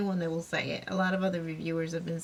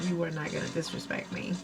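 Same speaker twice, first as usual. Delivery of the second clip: plain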